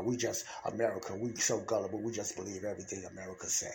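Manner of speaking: low, quiet, sarcastic jab.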